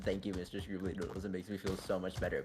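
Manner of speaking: sarcastic, falsely grateful tone. Retelling own past reply to a silly remark: retelling a sarcastic remark. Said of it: "it sarcastically said".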